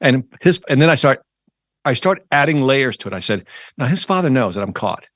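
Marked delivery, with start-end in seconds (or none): none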